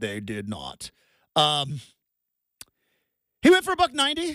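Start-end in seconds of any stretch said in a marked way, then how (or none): 0.0-0.9 very deep, hushed storyteller narration. Recapping a football game, repeating a line in a narrator voice. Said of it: "narrator voice".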